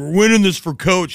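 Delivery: mock crying, speaking through fake sobs. Retelling a pregame speech video, imitating a player crying. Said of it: "He's crying. He's like".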